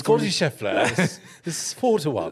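put-on British accent. Repeating a list of betting odds after being asked to, in a British accent. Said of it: "Can you repeat these at a British accent?".

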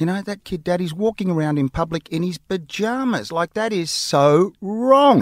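put-on acted, top-of-the-lungs child's shout. Retelling what a young son shouted out in public: imitating a child shouting loudly. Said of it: "at the top of his voice".

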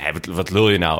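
usual speaking voice

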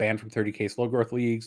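plain

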